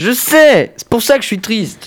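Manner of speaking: sobbing, tearful crying voice, very high. Answering that it is the last show, crying while talking. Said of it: "tu vois que tu pleures".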